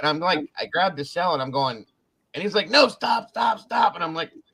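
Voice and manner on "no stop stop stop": put-on girlish, high, drawn-out screaming. Retelling a friend with a turtle stuck on his face: imitating a friend screaming. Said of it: "he's screaming like a girl".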